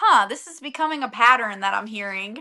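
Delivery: ordinary talk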